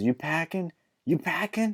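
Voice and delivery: mock high-pitched shout. Retelling what a friend shouted: imitating a shout. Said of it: "he was shouting at".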